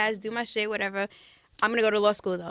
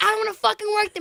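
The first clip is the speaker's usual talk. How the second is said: put-on shrill, very high drunken yell at full volume; 12 semitones higher, 5 dB louder than usual. Retelling a night out, yelling in the street: imitating own drunken yelling. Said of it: "Yelling at the top of my lungs".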